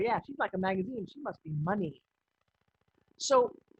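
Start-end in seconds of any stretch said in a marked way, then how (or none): none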